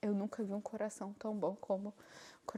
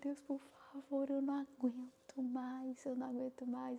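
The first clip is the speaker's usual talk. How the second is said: mock crying, tearful, begging tone; 4 semitones higher than usual. Speaker recounts past prayers, retelling tearful pleading. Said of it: "eu chorava".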